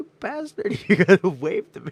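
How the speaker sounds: loud, very high swooping hollering yell. Retelling yelling at him to get a wave, reenacting the yell. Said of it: "I'm yelling at him".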